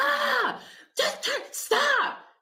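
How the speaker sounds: sudden, very high, drawn-out, snapping yell. Retelling how P snapped in the car: imitating someone yelling. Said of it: "yells at me out of nowhere".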